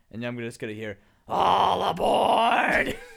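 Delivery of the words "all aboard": put-on ghoul voice, higher and louder. Imagining meeting another speaker turned ghoul in the wasteland: imitating a ghoul. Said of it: "That was really good".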